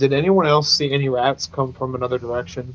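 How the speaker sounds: plain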